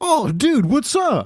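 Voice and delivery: obnoxiously chipper, very high, drawn-out voice. Recounting pulling up to the microphone, the speaker quotes the Starbucks guy: imitating an obnoxiously chipper guy. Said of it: "the most like obnoxiously chipper Starbucks guy".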